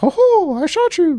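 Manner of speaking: very high squeaky cartoon voice, slow. Joking about a Disney shooter game, in a Mickey Mouse voice. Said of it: "Mickey Mouse running around going like".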